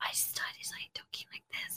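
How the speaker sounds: hushed whisper under the breath. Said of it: "and I was whispering".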